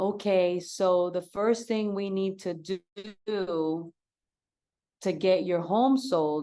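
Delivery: slow, measured, steady, drawn-out speech. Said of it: "I'm over here talking to them at".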